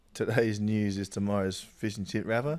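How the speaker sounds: usual speaking voice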